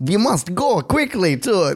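fake Russian accent. Speaker acting out what they say, in a bad Russian accent. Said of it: "This is my best Russian accent".

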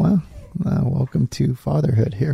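ordinary talk

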